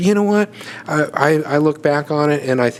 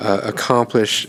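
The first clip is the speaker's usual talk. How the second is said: normal talking voice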